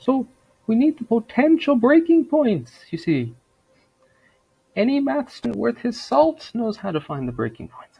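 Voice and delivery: very high, loud, swooping sing-song put-on voice. Impersonating Jordan Peterson while talking about breaking points: Jordan Peterson impression. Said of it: "I'm done impersonating the J P".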